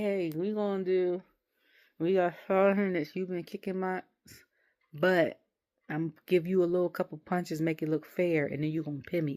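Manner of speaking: normal talking voice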